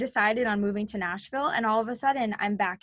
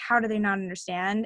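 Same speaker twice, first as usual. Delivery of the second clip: ordinary delivery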